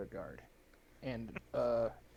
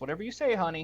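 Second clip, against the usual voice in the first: cheeky, saucy, sassy, pitched up and raised; 6 semitones higher, 5 dB louder than usual. Voicing a character who hooks another's arm and replies: sassy. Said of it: "Ooh, sassy".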